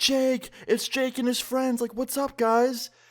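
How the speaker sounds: mock, giddy, very high, excited shriek. Retelling a friend's mom greeting them at the door: imitating someone screaming excitedly. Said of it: "she's screaming, like".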